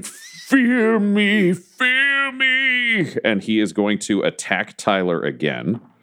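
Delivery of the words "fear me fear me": very high, slow, drawn-out defiant shout. Voicing a withering judge whose illusions shatter: shouting. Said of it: "just shouting".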